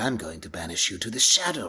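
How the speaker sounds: lousy, campy, hammy villain voice, pitch swooping up and down. Showing an early take of a cartoon voice: Pegasus voice mixed with lousy Peter Lorre impersonation. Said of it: "like Pegasus filtered through, like, a lousy Peter Lorre impersonation".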